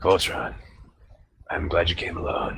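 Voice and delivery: rough, hoarse voice. An unseen figure speaks to voltron from the gloom, raspy voice from the gloom. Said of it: "a raspy voice speaks to you from the gloom".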